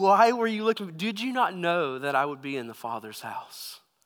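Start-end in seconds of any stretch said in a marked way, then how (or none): none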